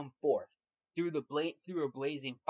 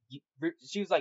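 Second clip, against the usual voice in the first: ordinary talk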